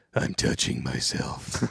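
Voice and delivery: rough, gravelly, creaky, rasping voice. Retelling a line said over a keyed portable radio near midnight: Batman voice. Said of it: "in a Batman tone voice".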